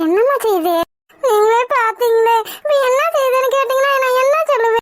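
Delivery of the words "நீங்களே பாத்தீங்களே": slow, tearful crying. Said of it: "எதுக்குப்பா அழுற?".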